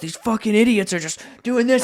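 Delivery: put-on fed-up, furious, flipping-out rant. Speaker retells a Monopoly game where a player got mad, acting out someone flipping out. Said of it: "And he starts flipping out".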